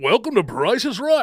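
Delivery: big, very high-pitched game show announcer voice. Recalling Chuck, a page who greeted Price is Right audiences, imitating Chuck's announcer voice. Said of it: "he would like talk like an announcer guy".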